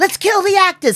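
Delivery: put-on yell, very high and loud. Retelling a chaotic theater protest where someone yelled: imitating someone yelling. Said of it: "someone yells".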